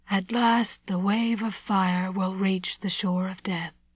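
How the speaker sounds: eerie, mystical half-whisper, hushed and otherworldly. A narrator reads a man staring up into the storm: mystical half-whisper. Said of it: "He spoke in a mystical whisper".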